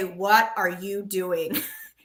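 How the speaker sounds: slow, scolding mother voice. Imagining the screen scolding about opening the trading app: imitating mom's scolding voice. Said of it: "in my mom's voice".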